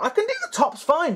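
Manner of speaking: voice cracking and breaking up, very high pitch. Explaining building the model's legs, voice cracking. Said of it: "Oh, my voice broke".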